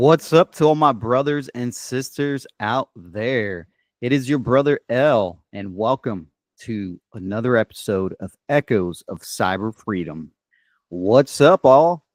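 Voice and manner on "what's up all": loud, high, down-home country accent. Podcast host greets listeners at the start of an episode, country-sounding greeting. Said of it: "I sounded pretty country there".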